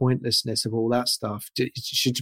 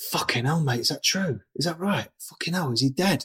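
put-on shocked disbelief, pitched higher; 3 semitones higher than usual. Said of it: "Noel called me straight back and was like".

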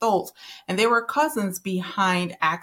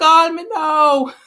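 loud, high-pitched, fake Jamaican accent; 10 semitones higher, 11 dB louder than usual. Describing a TV psychic spokesperson and quoting her in a Miss Cleo fake Jamaican accent. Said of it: "she had the little fake Jamaican accent".

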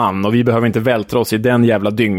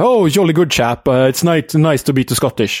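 put-on English football supporter accent; 4 semitones higher than usual. Describing an English TV presenter mimicking English supporters: imitating English football supporters. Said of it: "förställer han rösten och säger typ så här".

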